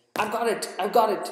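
high, excited crying out. Narrator reading Marcel jumping out of his car, an excited cry. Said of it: "he cried, all excited".

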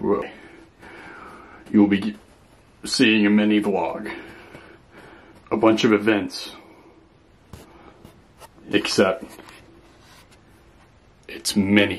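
put-on theatrical grandeur, slow and over-dramatic. Opening a mini vlog day on purpose: mock dramatic, slow delivery. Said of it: "I'm gonna make it look this real dramatic".

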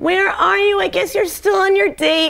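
put-on high, whining, clingy girlfriend voice. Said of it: "and she was all".

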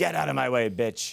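rough, creaky, bossy growling voice with authority. Showing how a little-boy sketch character talked: Harvey Fierstein voice. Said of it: "kinda talked like Harvey Fierstein".

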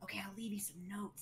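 hushed, soft, high little whisper. Speaking in character to a child, leaving notes: whispering. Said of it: "whispering that to her".

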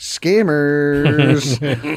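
long, stretched-out announcer-style call. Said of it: "this is the portion of the show we do".

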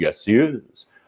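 flamboyant, showy delivery. Retelling a phone call where the teacher answers a kid's question, imitating Maestro Kyle's flamboyance. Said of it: "He's like very, very, very flamboyant".

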